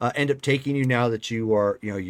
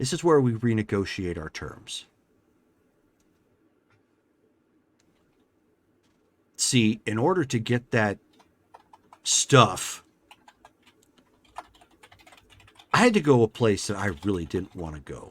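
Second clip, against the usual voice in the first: put-on female character voice. Voicing a character who leans over a restrained player: Bitter Shadow voice. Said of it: "she leans over you and places her arms on either side and she says".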